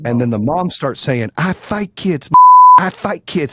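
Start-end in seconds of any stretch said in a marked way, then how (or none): 1.4-3.5 heated, escalating, loud, drawn-out angry yell. Retelling a mother yelling at his son during a dispute, imitating a woman getting loud. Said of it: "she's like getting loud".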